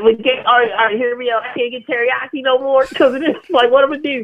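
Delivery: put-on country voice. Imitating a concerned yokel who misses the food: imitating a down-home yokel. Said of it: "some down-home yokel who's, like, legitimately concerned".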